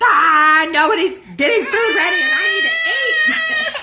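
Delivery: very loud, very high, shrill, rising yell. Retelling being very hungry and getting food ready: imitating own past yelling. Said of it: "I'm kinda yelling at my mom".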